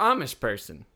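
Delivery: ordinary talk, nothing marked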